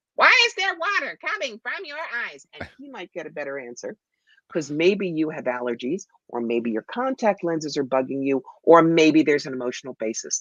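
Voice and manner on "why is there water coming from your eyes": very high, delighted alien voice. As a Martian sent to examine humanity, speaking in Gleeble the Martian's voice. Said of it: "toddles over to you with great delight and goes".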